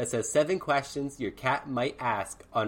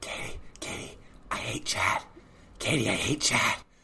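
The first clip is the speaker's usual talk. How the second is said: fake whispering in a put-on cat voice; 2 semitones lower than usual. Pretending to be another person's cat whispering in her ear: put-on cat whisper. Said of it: "She only whispers in my ear".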